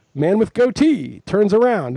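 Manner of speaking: satirical mocking tone. Quoting a satirical show's line to explain the joke, mocking voice. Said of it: "this is like a mocking voice".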